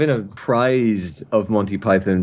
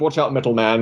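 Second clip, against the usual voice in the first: ordinary delivery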